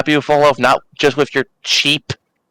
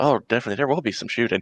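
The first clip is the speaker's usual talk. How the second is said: muttered aside, lower and quieter; 4 semitones lower, 8 dB quieter than usual. Muttering an aside in character during a game: said under the breath. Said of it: "I say that under my breath".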